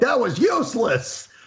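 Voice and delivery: high, slow mock scream.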